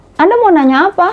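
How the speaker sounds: unfriendly, sharp, harsh, very high-pitched tone. Showing the high tone someone suddenly uses mid-conversation: harsh, raised tone. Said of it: "bukan nada tinggi. Kalau kita baru aja ngobrol tiba-tiba udah yang".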